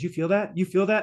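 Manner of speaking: ordinary talk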